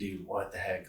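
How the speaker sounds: acted furious reaction, kept very quiet, hushed. Recounting reacting to a faculty member's message; retelling getting super angry. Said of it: "got super angry".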